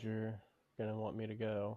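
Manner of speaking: quiet, flat, unvaried monotone delivery. Asked how they feel about Constantine, a speaker answers in a quiet monotone. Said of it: "Why are you talking so quietly and".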